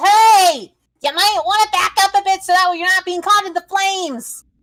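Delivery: loud, high yell.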